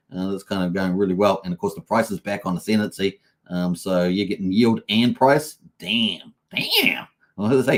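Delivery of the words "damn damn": bad fake American accent, pitched higher. A kiwi speaker reacting to market figures, in a bad american accent. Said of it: "a Kiwi's bad impersonation of a bad bad American version accent".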